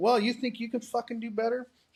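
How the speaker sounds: put-on angry cussing. Retelling what they said at home after being told to pray, retelling own angry cussing. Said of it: "I was cussing because I was so mad".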